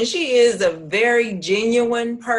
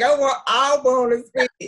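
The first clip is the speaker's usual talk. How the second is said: very slow, drawn-out speaking voice; 3 semitones higher than usual. Imitating how she asks to speak: imitating her voice. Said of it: "trying to be her voice".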